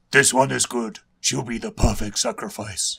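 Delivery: put-on grating, really gruff, rough vampire-girl growl. Storyteller voicing a female vampire choosing a sacrifice, really gruff vampire voice. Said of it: "I'm going to give her a really gruff voice".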